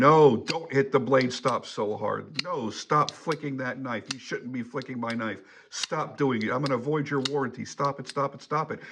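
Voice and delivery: mock nagging scolding, repeated over and over. Giving knife-handling advice, imagining Chris Reeve behind you: mock-scolding as Chris Reeve. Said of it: "wagging his finger at you, going".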